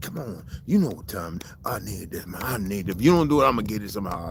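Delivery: acted-out, dramatic film-scene delivery. Retelling playing his father in a scene: doing a Denzel Washington impression. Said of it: "doing the Denzel".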